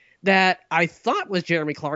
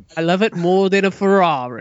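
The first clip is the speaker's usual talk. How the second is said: put-on British accent, louder; 4 dB louder than usual. Praising the PlayStation four as a joke: Jeremy Clarkson impression. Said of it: "no more impressions".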